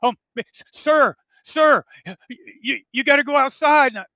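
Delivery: put-on high, very loud, quavering, trembling voice. Retelling the woman at sign-in who noticed the speaker, imitating her trembling voice. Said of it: "and now she's trembling".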